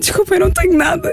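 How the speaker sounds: put-on crying while talking. Speaker retells apologizing to a woman at her car window, retelling speaking through tears. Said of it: "digo-lhe a chorar".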